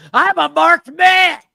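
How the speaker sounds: very loud, shrill, frantic, wild scream. Complaining about a man's bad acting, act out his line, imitating someone screaming like a lunatic. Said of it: "screams out".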